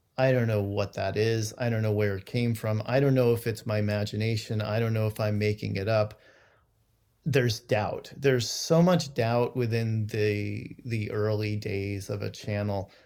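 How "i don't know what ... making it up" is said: plain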